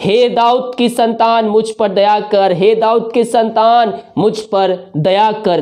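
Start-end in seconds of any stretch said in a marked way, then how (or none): none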